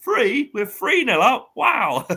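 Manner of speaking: mock very high, drawn-out, really loud outburst. Retelling what he said right near some people at the scoreboard, retelling a really loud remark. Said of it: "in a really loud voice".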